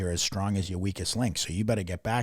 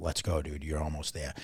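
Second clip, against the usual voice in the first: soft, lower-pitched and quieter voice; 4 semitones lower, 4 dB quieter than usual. Retelling how he urged the speaker up the hill, soft voice. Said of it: "like soft so that no one else heard".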